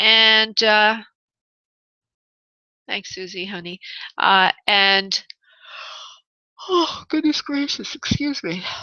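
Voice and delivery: yawning while choking. Hosting for listeners this evening, choking and yawning. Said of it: "Between choking and yawning".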